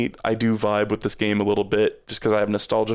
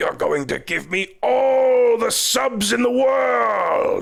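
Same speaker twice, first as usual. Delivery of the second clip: stretched-out, very high, rough, creaky cartoon villain voice; 13 semitones higher than usual. Trying out a Robotnik voice while talking about a game. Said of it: "That was my attempt at a Robotnik voice".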